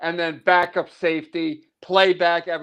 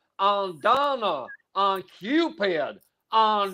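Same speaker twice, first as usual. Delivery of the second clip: put-on Southern accent, very slow and drawn out; 2 semitones higher, 4 dB quieter than usual. Speaker imitates an actor saying lines to the reindeer, Southern accent impression. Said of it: "he had a southern accent".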